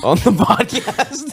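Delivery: high, slow, drawn-out mock dramatic delivery.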